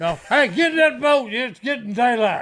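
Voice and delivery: mild half-holler, calling out. Retelling a boat trip story, imitating Phil hollering. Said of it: "Phil hollers out".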